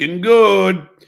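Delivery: put-on Puerto Rican Spanish accent. Repeating his grandfather's saying once more, in a Puerto Rican accent.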